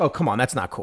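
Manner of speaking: plain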